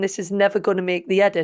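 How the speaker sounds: plain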